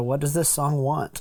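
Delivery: ordinary delivery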